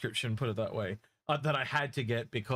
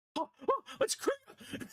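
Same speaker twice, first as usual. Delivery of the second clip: very high, slow, drawn-out schoolgirl voice. Retelling a friend figuring something out, imitating someone talking like a schoolgirl. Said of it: "hear him talk like a schoolgirl".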